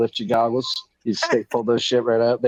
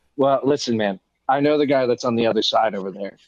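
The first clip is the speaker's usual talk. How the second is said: usual speaking voice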